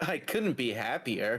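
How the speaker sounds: put-on valley girl accent. Playing a character on a trip who says they're happy: valley girl voice. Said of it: "It's a fucking Valley Girl voice".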